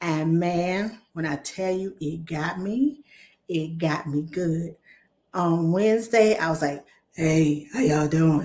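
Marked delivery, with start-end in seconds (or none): 7.1-8.5 weak, worn-out, bad-sounding voice. Retelling how the voice sounded on Wednesday: imitating own bad voice. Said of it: "That's how bad my voice".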